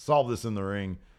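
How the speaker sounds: usual speaking voice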